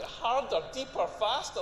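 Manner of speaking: ordinary talk, nothing marked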